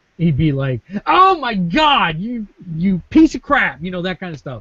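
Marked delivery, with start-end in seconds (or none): 1.1-3.8 high, full-lunged scream at the top of his lungs. Imitating an arcade player who missed a combo, screaming at the top of his lungs. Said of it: "he would scream at the top of his lungs".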